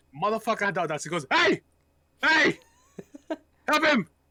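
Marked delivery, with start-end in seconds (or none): 1.3-4.1 very high, shrill, slow, drawn-out shouting. Retelling how a coworker ordered them to help: imitating a coworker shouting. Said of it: "he just kept shouting at me".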